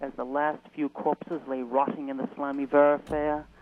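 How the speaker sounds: put-on speaking with English accent. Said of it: "such a good English accent".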